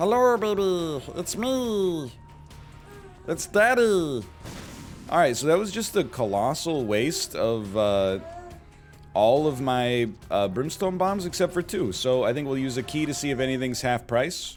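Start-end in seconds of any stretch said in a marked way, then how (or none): 0.0-4.2 high, very slow alien drawl, "me" stretched. While gaming, the player tries a new voice on an in-game baby, alien voice. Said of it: "we've never really done alien voice either".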